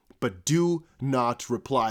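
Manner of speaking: very slow, deliberate, drawn-out delivery. Warning viewers not to reply to scam emails: speaking very slowly. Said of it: "I'm saying that very slowly".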